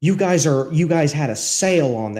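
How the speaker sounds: put-on angry voice. Retelling a customer's complaint about a cheese sale: imitating an angry customer. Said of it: "actually angry".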